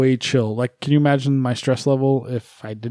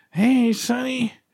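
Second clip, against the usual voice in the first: put-on thin, wispy, very high old-woman voice; 10 semitones higher than usual. Joking about the voice in granny videos: wispy old granny voice. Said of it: "that voice that's like really, like, like really wispy".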